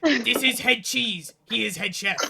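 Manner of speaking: very loud, high-pitched put-on goblin voice. Game master voicing a goblin in a large chef hat introducing himself: goblin head chef voice. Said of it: "a goblin with a comically large chef hat".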